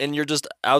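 plain

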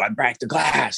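gentle put-on yell. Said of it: "He'd yell it".

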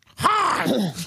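screechy, shrill, yelled crow voice. Acting out a crow bobbing its head and yelling hi: shrill yelled crow voice. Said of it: "yelling hi in his shrill crow voice".

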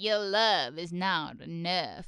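slow, drawn-out, regal queenly pronouncement. Retelling a cartoon scene, quoting the Crystal Queen: impression of Courtsion. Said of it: "good impression".

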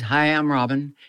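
imitated meek, timid voice. Retelling how a newcomer introduced himself, imitating Robin's meek, quiet voice. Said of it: "he's very meek, very, very quiet".

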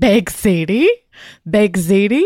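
acted, very slow, insistent drawn-out scream. Retelling a friend who kept repeating a question: imitating a friend screaming. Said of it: "she just kept screaming baked ziti at me".

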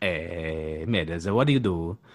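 Italian accent impression. Challenged on the podcast to prove it, the speaker does an Italian accent impression. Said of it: "My Italian impression is very good".

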